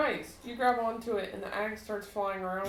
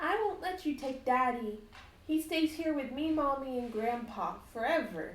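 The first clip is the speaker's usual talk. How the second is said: put-on high, small little girl voice; 5 semitones higher than usual. Voicing a little girl who refuses to let the party take Daddy: little girl voice. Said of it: "The little girl looks up at you all".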